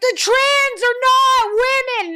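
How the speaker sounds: put-on screaming. Retelling a sudden outburst while walking with a friend: retelling own past screaming. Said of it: "and then I just start screaming".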